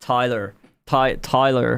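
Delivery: put-on name pronounced the American way, American accent. Showing how an American accent says the name: imitating an American accent. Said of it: "an American accent say Tyler".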